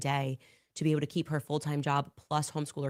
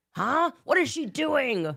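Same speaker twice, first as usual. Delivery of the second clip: mock ranting and screaming voice, higher and louder; 10 semitones higher, 6 dB louder than usual. Mocking how Tim Pool would rant and scream: imitating Tim Pool ranting and screaming. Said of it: "Let Tim Pool rant and scream and say".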